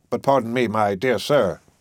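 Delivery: ordinary delivery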